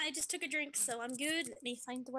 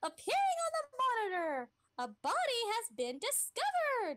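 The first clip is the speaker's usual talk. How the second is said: pitch pushed way up and swinging; 9 semitones higher, 4 dB louder than usual. Playing the game's announcer after a body is found: Monokuma voice. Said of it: "I love your Monokuma voice".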